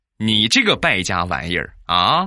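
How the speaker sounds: ordinary delivery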